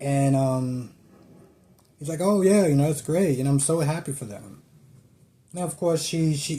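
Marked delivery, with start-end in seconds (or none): 2.2-4.6 extremely fake, forced cheerful happy tone. Retelling what he said after hearing of the proposal: imitating a fake happy tone. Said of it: "the most fakest smile and the most fakest tone".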